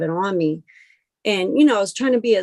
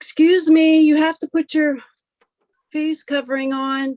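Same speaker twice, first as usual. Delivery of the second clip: mock woman's voice, high, yelled and demanding; 8 semitones higher, 4 dB louder than usual. At the self checkout, retelling the lady behind them, imitating a lady yelling. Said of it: "I hear some lady yelling".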